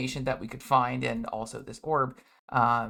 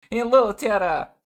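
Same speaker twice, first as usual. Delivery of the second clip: put-on clumsy Russian-Ukrainian accent; 9 semitones higher, 11 dB louder than usual. Voicing the basilisk leader greeting Tara: bad Russian-Ukrainian blend accent. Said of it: "preemptively apologize for my shit-ass accent".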